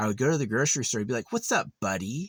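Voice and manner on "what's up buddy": put-on nasty, unfriendly, mean, needling tone. Retelling how a guy at the grocery store greeted them: imitating a mean greeting. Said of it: "really mean".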